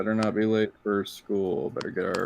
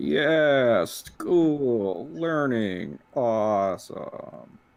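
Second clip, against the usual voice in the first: very slow, sarcastic fake cheer, mock enthusiasm; 4 semitones higher than usual. Voicing a tired character cheering about school: sarcastic. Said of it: "Luther sarcastically puts his fist in the air".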